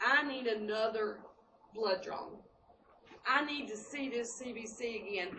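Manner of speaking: plain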